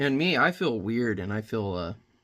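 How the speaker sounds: usual speaking voice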